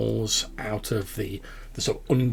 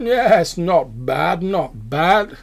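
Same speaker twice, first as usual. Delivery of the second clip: very loud, high-pitched words spoken through chewing; 7 semitones higher, 8 dB louder than usual. Describing a man eating meat, the speaker acts out his reply while imitating chewing. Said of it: "he chews the meat and he says".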